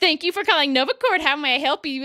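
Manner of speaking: mock self-assured, smug, polished tone. Retelling a streamer's prank-call greeting: imitating Nova's smug phone greeting. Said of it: "And then he always just so smug".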